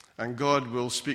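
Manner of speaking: plain reading voice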